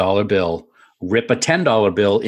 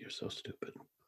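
pause, then a hushed, near-whispered, cutting jab. Answering a teasing joke after a pause: paused, then said very quietly. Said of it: "the way you paused and just said that very quietly".

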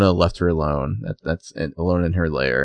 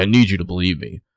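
mock-commanding, curt, pissy tone. Recapping a scene, imitating a man's line to a woman, mock-commanding, pissy. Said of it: "He's, like, commanding".

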